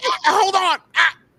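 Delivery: choked, strangled cries, high-pitched and loud. Retelling a fall with a phone cord around the neck: imitating being choked by a cord. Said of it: "the cord got around her neck".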